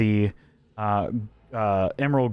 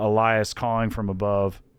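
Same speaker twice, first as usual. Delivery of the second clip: ordinary talk, nothing marked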